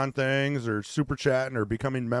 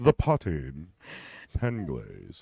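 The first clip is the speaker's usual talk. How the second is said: put-on drawn-out, slow, swooping English accent; 8 semitones lower than usual. Saying a product name the way m h says it: imitating m h's english accent. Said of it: "You've gotta say it like that".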